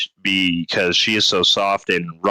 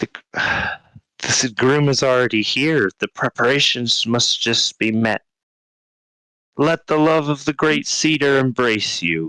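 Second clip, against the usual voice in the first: very burbly, gurgled, high creature voice; 5 semitones higher than usual. Voicing a figure speaking to travelers, in a burbly, gurgled voice. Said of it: "it speaks to you in a very burbly, gurgled voice".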